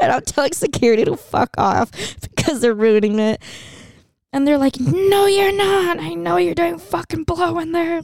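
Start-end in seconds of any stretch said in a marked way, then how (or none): 4.8-8.0 acted high, shrill screaming. Retelling how security screamed while kicking them out: imitating security screaming.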